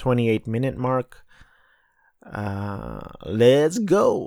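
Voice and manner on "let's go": put-on animated girl voice. Kicking off a recap of the 95th Academy Awards, doing an Encanto Mirabel impression. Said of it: "That was my Encanto Mirabel impression".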